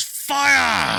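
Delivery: very high, hoarse, rough shout with "fire" stretched. Voicing a figure ordering an attack: in-character shout. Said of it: "he just goes".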